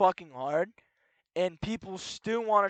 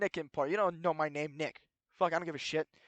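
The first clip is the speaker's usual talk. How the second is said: ordinary talk, nothing marked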